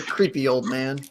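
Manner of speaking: hushed half-whisper under the breath. Half-whispering an aside about an old man in the game: half-whispering. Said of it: "I'm gonna whisper".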